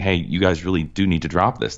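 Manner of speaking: usual speaking voice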